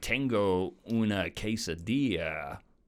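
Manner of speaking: put-on Spanish spoken with an American accent. Imitating how Americans sound ordering in Spanish: Americans speaking Spanish. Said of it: "when the U S are like".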